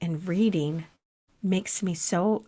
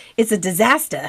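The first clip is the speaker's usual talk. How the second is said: loud put-on Boston accent; 6 dB louder than usual. Describing a messy move, quoting John: imitating John's Boston accent. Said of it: "John says in his Boston accent".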